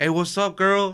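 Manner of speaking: high-pitched, flirty tone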